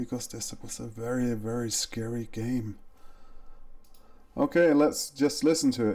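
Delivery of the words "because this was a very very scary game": soft, hushed, slight half-whisper. Testing a microphone recording by half-whispering a little: half-whispering a little. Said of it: "I'm gonna start whispering a little bit".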